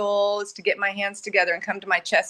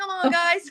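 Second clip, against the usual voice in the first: play-acted, encouraging, rallying cheer; 9 semitones higher than usual. Retelling how they spoke to their own cells: retelling cheering them on. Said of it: "cheering 'em on".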